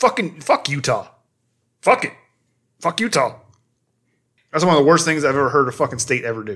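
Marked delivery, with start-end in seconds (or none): 0.0-3.3 fired-up, heated, furious angry rant. Speaking to a co-host who read the same book: heated rant. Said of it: "I'm fucking heated right now".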